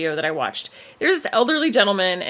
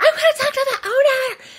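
play-acted angry, demanding, high, shrill yell. Retelling a woman's outburst at a store owner about masks, imitating her yelling.

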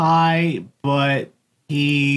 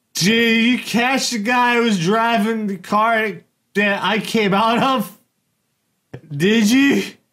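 put-on very slurred drunken speech, words smeared together; 5 semitones higher than usual. Retelling a drunk man's reply when asked to surrender, imitating Prockett's slurred speech. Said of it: "very slurred speech".

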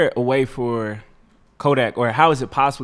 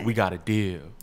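put-on sexy late-night voice, lower and quieter; 3 semitones lower, 6 dB quieter than usual. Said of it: "he had on his sexy voice".

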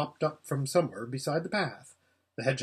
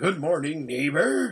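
thick, rather wheezy character voice; 3 semitones higher, 3 dB louder than usual. A voice in a wood greets a passerby, thick and rather wheezy. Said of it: "a thick and rather wheezy voice".

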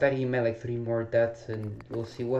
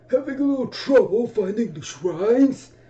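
very high, raised put-on elderly voice; 11 semitones higher, 7 dB louder than usual. Playing a game, voicing the old man's line to the player: old man voice. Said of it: "Try to do the voice".

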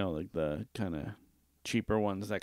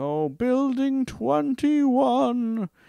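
very high, loud, ghost-like wailing call; 8 dB louder than usual. Retelling how an older man on a full bus shouted out the stop, ghostly voice. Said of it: "kind of sounded like a ghost".

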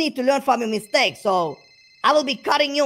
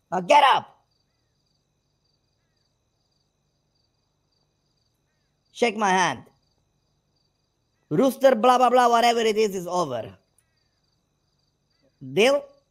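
getting heated, worked up. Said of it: "I'm getting heated".

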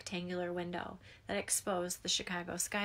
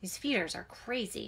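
openly disgusted, full of distaste. Narrator reads an uncle's remark to his niece, with disgust. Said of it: "her Uncle Robert said with disgust".

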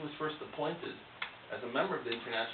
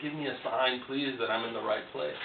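plain

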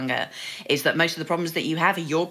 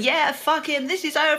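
furious, angry venting, pitched very high; 12 semitones higher than usual. Describing what women say over drinks, mimicking an angry woman. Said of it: "women are being angry".

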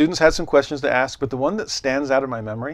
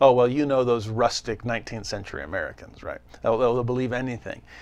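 mock patronizing, talking-down lecturer voice; 2 semitones lower than usual. Retelling how a professor talked about frontier Americans, mimicking condescending professor. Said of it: "Almost this condescending tone on the part of the professor".

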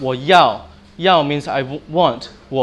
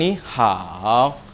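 falling-rising dipping third tone on ni and hao; 4 semitones lower, 3 dB quieter than usual. Teaching Mandarin tones, showing how ni hao goes down, falling third tone. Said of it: "You basically go down".

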